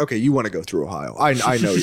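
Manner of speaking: low, fast navigation app voice.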